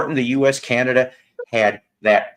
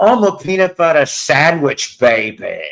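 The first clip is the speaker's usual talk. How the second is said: bad, botched, shoddy, swinging groovy British spy accent; 4 semitones higher, 4 dB louder than usual. Trying out an impression for the others in the conversation, in a shitty Austin Powers impression. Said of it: "That's the shittiest Austin Powers impression".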